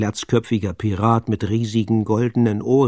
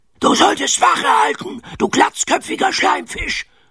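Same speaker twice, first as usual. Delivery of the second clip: very high, sharp, snapping scolding tone. Knurrhahn snaps at the bald fellow who was supposed to keep watch. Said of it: "schnauzte Knurrhahn".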